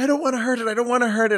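put-on near-tears voice, very high and rushed. Retelling a streamer's reaction as she has to hunt in a game, imitating someone near tears. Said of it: "she's like crying practically".

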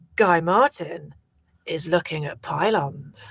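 dramatic, deep, really low, slow, terrible narrator voice. Imitating a documentary narrator with a really low voice. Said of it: "Who's got the really low voice".

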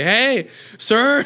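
very high, calling-out yell. Retelling a lady at a store calling to a man: imitating a lady yelling. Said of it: "she was, like, yelling".

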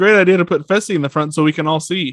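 dry, sarcastic tone with fake approval. Retelling what a man watching said about Fessy; imitating someone being sarcastic. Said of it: "he says it sarcastically".

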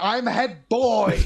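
high-pitched, shrill, yelling scream. Retelling a film scene, imitating Percy screaming. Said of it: "keeps on screaming".

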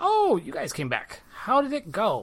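high, swooping, sing-song tiny gnome voice. Voicing Alina as the party enters her shop: Alina, tiny gnomish woman voice. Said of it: "this tiny little gnomish woman".

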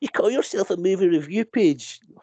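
Scottish Edinburgh speech. Mocking an online commenter on a movie review page, in an Edinburgh accent. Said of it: "your complaint comment voice sounds like you're from Edinburgh".

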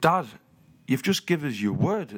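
put-on serious tone. Retelling a confrontation with Dad: retelling own serious tone. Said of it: "I'm all serious".

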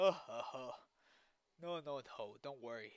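very loud speech with laughing through the words. Voicing Blue as he answers John's worry: giggling while talking. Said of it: "Blue giggles and goes".

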